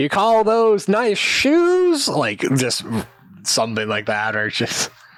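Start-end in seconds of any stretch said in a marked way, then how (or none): 0.0-2.1 put-on very high, slow, catty, sloppy-drunk taunting voice. Recounting the game, speaker acts out Temin taunting the others: drunk Temin voice. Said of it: "Temin is tripping over himself".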